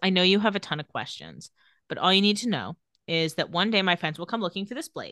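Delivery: ordinary talk, nothing marked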